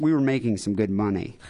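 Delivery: plain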